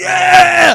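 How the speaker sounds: put-on drunk, high, loud triumphant yell.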